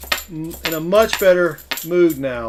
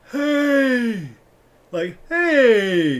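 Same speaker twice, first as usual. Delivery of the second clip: put-on comic old man voice, higher, "hey" stretched out; 7 semitones higher than usual. Showing an imitation of an old man character from a comedy show: Tim Conway old man voice. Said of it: "That's my interpretation of him".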